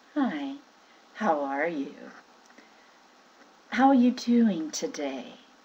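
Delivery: fond, caring, loving, affectionate voice. Speaker demonstrating different voices one can use, now a loving voice. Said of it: "here's a loving voice".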